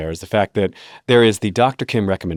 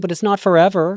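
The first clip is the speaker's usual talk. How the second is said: put-on snarky voice, higher; 10 semitones higher than usual. Imagining a snarky inner voice answering a family member: Anna Kendrick snarky voice. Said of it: "an Anna Kendrick snarky voice in my head being like".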